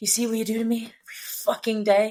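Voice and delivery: put-on breathless voice. Retelling how John read a line: imitating John breathless. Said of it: "He is breathless there".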